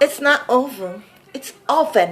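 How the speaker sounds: imitated boy's voice saying "oven". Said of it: "And then he's like".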